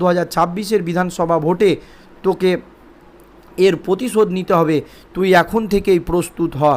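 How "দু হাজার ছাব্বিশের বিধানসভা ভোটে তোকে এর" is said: ordinary delivery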